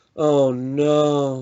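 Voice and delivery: despairing, high, loud, drawn-out, almost tearful dismay. Describing a dubbed film cut, imitating the character almost crying. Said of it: "like he's almost like depressed about it and like crying almost".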